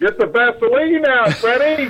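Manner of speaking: very high, loud heckling holler. Recalling a heckler sitting behind him during free throws: retelling a loud heckling shout. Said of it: "He's got a loud voice".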